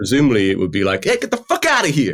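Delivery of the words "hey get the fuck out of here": very high, blunt, put-on New York cabbie voice. On a terrible-accents podcast, voicing a bull in a new york taxi driver accent. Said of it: "like a 1970s New York taxi driver".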